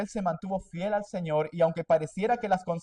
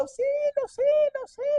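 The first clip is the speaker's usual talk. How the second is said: put-on, piercing, very high-pitched yelling. Retelling José's story, the speaker plays the woman, imitating shouting for help. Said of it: "empezó a gritar a todo el mundo".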